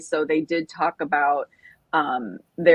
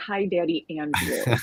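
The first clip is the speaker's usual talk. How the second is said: ordinary talk, nothing marked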